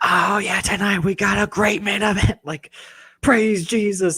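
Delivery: very high, over-the-top preacher voice. Show how John Cena sounded at certain times, in an over-the-top John Cena preacher voice. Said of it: "had like a preacher voice".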